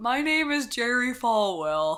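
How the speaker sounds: slow, measured, deliberate reverend-style voice. Picking someone important to impersonate, launching a Jerry Falwell impression. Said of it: "I should do an impression of someone important".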